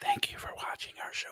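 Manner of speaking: soft, gentle ASMR-style whisper.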